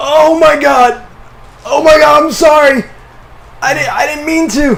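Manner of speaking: high, loud, panicked voice.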